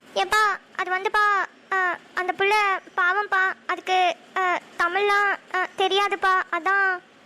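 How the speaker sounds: halting, stuttering, stammering speech. Answering his father's question about the foreign girl: stammering. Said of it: "இப்படி திக்கி திக்கி பேசுற?".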